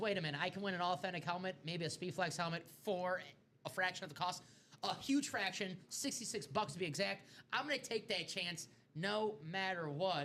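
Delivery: ordinary delivery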